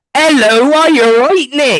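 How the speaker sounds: put-on Wiltshire accent, pitched very high. Quoting a woman's first words as she came on screen, imitating a Wiltshire accent. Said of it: "it was a Wiltshire accent".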